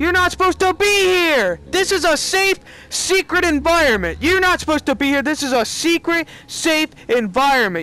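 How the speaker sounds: scared, very high-pitched outburst. Reacting after spotting someone creeping up in VR: startled and scared. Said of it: "That scared me 'cause I saw some guys creeping on me".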